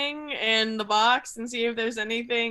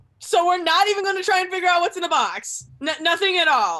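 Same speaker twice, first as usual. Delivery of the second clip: pissed-off, fuming, loud and pitched-up voice; 6 semitones higher, 6 dB louder than usual. Voicing Bryony holding a box, asking about its contents: furious, pissed off. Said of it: "pissed as hell".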